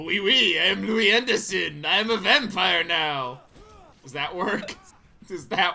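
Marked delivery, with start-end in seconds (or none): 0.0-3.4 loud, slow, laid-on fake French accent. Reading the vampire's lines as Louis Anderson, now French: Louis Anderson voice, French accent. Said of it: "He's French".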